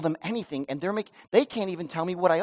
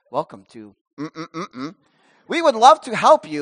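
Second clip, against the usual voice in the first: put-on little automated robot voice, louder; 3 semitones lower, 7 dB louder than usual. Pastor retelling a customer service call, imitating the automated greeting, little robot voice. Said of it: "that little robot voice came on".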